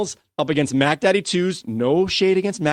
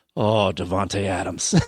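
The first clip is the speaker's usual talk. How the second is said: mock disdainful tone, lower pitch; 8 semitones lower than usual. Reading a listener's question, saying a player's name: imitating a disdainful tone. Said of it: "you say it with such disdain? You mean like this?".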